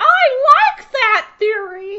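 very high, slow, silly, funny put-on voice. Offering a reaction to the theory, in a funny voice. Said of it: "give you a funny voice of".

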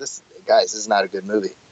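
ordinary talk, nothing marked

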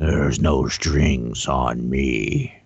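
very low, put-on, sinister, menacing scary voice. A podcast guest, asked for a tagline, delivers it in a put-on scary voice. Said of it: "it sounded very scary".

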